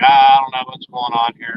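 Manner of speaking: ordinary talk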